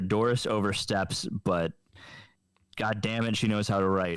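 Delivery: ordinary talk, nothing marked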